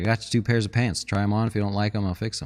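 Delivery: normal talking voice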